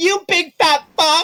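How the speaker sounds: very high, loud, drawn-out jeering taunt. Voicing a character who runs up to taunt a player: taunting insult. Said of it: "She's like being just an asshole to you".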